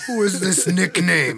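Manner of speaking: put-on Austrian accent. Speaker quotes an Austrian man while chatting with others, put-on Austrian accent. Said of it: "I don't know why I'm giving him this accent".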